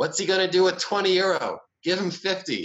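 shrill, very high shouted yell. Retelling how a guy at another table called out: imitating someone yelling out. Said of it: "yells out".

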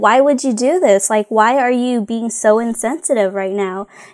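put-on offended outburst. Retelling a show scene where a statue head rolls: imitating offended Aang. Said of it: "Aang is just so offended".

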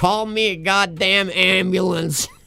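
play-acted slow, drawn-out drunken scream. Retelling how a drunk man stuck in a back seat yelled: retelling a scream. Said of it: "And he's screaming".

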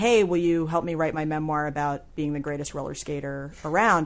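plain

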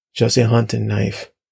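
plain reading voice

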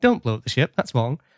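normal talking voice

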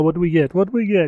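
put-on heavy Italian accent. Retelling what a manager said after walking over, full-on Italian accent. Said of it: "full on Italian accent".

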